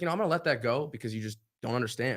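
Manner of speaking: normal talking voice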